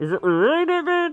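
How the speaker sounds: very high, loud, muffled as through a bad headset. Imitating how another player's bad headset sounds: imitating muffled bad headset audio. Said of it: "I'm gonna try to imitate it".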